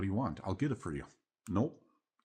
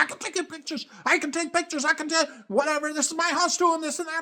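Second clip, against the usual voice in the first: shrill, very high, loud screamed rant; 11 dB louder than usual. Retelling how a woman started screaming at the speaker: imitating someone screaming. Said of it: "she started screaming".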